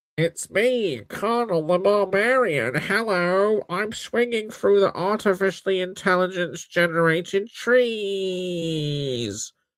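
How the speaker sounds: pinched-nose nasal voice, drawing out "trees". Asked to pinch his nose and speak as Connell, pinched-nose Connell voice. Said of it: "pinch your nose and speak".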